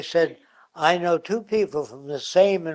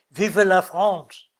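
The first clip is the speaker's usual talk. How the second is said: put-on French accent; 3 semitones higher, 4 dB louder than usual. Speaker illustrating how a Frenchman would say it, in a French accent. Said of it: "with a French accent".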